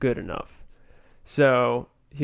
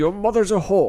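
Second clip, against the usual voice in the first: put-on Scottish accent, higher pitch; 5 semitones higher than usual. Retelling a comedy sketch about a quiz show: Sean Connery impression. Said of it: "a pretty good Sean Connery impression".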